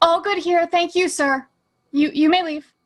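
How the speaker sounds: grand put-on noble voice. Asked how Aurora sounds and what she would say, answering in Aurora's most noble voice. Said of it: "I do put on my most noble voice".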